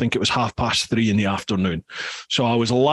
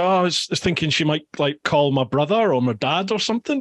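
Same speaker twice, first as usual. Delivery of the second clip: ordinary talk, nothing marked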